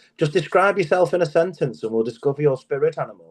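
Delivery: upper-class plummy delivery. Retelling what his personal trainer said, in a posh trainer impression. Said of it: "this posh trainer guy".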